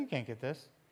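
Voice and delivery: acted-out smug, conceited, self-satisfied bragging tone. Retelling the Bible story of Samson taunting the thirty men: imitating a conceited boast. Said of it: "super, super conceited".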